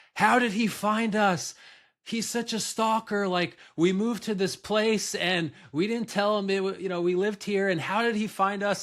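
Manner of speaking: mock frantic screaming. Speaker retells what a nineteen-year-old shouted on learning her dad was there, retelling a scream. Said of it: "she basically starts screaming and she says".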